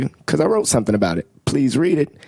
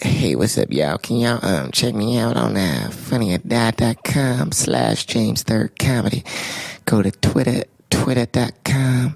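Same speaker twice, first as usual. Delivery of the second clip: put-on, slow, exaggerated, breathy character voice; 3 semitones lower than usual. Plugging social media accounts to listeners: put-on breathy voice. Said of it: "What is this voice?".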